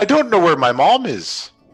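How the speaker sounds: creature voice of a dinosaur. Voicing a dinosaur who has lost his mom, speak in a dinosaur voice. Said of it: "get his dinosaur voices ready".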